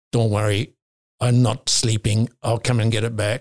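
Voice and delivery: put-on Croatian accent. Retelling a rival's reply after his world record was beaten, Croatian accent. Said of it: "I'll do it with his Croatian accent".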